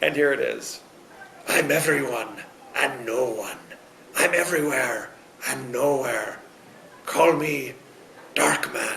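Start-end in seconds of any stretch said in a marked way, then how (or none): 1.5-9.0 slow, drawn-out, crazy character voice. Ending an episode with an out-of-context quote: Liam Neeson impression. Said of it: "That's my crazy Liam Neeson impression".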